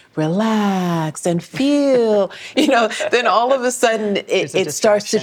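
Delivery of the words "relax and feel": seductive, sultry, pitched-up voice with "relax" drawn out. Giving a sexy librarian version of a Yoga Nidra: sultry sexy-librarian voice. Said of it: "give the sexy librarian version of the Yoga Nidra and I'm like".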